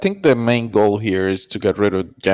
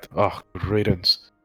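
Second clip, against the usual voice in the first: muttered quietly under the breath; 4 dB quieter than usual. Reacting in character to news that a shepherd's cousin was taken: muttered under the breath. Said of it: "I mutter under my breath".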